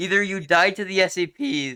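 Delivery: voice cracking mid-phrase on C P. Player explaining game strategy to teammates, voice cracking. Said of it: "Oh god, voice crack".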